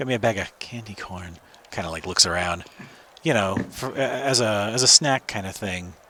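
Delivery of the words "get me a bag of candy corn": slightly hushed, lowered, secretive voice. Retelling how Fortune asked for candy corn, imitating Fortune's lowered voice. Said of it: "lowers their voice a little bit".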